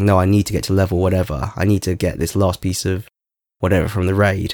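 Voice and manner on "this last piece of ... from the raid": ordinary talk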